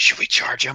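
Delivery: hushed, quiet whisper. Whispering back to a companion in character, asking to charge: whispering in character. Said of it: "I'm gonna whisper back".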